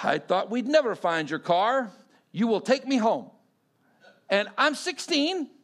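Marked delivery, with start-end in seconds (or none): 0.0-3.3 broad, thick, heavy put-on Russian accent. Quoting a woman as you reach your car at sixteen, thick heavy Russian accent. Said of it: "with a big, thick, heavy Russian accent".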